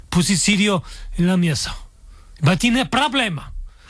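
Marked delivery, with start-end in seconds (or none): 2.5-3.5 put-on Syrian accent, much higher pitch. Retelling a confrontation with a man about closing the hotel, put-on Syrian accent. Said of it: "me ponía como una cosa así, siria".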